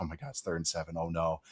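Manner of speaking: very quiet, hushed, doom-laden horror-movie dread. Recounting how someone in the group chat reacted, in mock horror-movie dread. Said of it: "Like he was saying it like it was like a horror movie".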